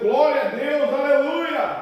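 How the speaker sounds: high, exultant, joyful shout. Retelling a healed blind man running from the barbershop: imitating someone shouting.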